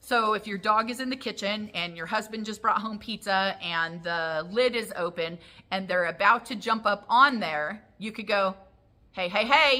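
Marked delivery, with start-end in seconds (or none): 9.1-9.8 louder, higher-pitched, interrupting hey. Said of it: "as an interrupter".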